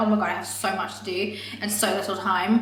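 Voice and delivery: ordinary delivery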